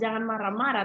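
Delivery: ordinary talk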